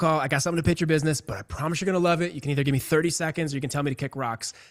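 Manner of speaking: light, playful, fast, rattled-off delivery. Sales pitch opener to get through to people: fun, playful and fast. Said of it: "when we've said it fun and playful and fast like that".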